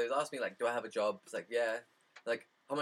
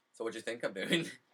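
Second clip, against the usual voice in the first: normal talking voice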